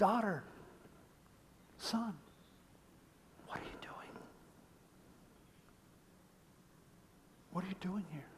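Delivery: soft, tender, gentle, kind whispered voice. Voicing God asking his children what they are doing: gentle voice of God. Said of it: "So gentle, so kind".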